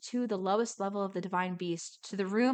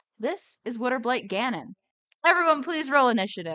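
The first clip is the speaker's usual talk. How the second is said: ordinary delivery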